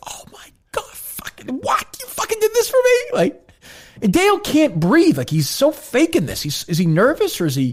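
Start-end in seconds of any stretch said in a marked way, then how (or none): 0.1-3.0 very high, thrilled, gushing, stunned disbelief. Imagining how the birthday girl reacts to the video: imitating Trisha's reaction. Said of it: "Is she like".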